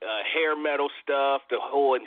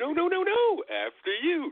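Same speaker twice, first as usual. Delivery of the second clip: high, overly polite cartoon voice. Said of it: "just super polite".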